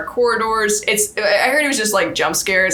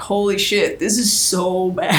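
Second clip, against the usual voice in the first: normal talking voice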